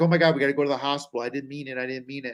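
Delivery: put-on, fast, hyperventilating, panicked sobbing babble. Retelling how a mother panicked after hitting someone: imitating someone crying and hyperventilating.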